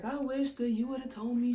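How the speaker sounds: mock-upset, complaining tone. Retelling a lady who wanted her money back, imitating her being upset. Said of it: "because she's upset".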